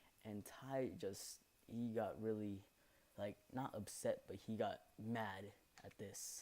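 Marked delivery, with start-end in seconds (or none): none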